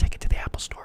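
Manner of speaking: soft, breathy, barely voiced whisper. Retelling what a store worker said from behind: imitating a whisper. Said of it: "walked up behind me and he kinda whispered".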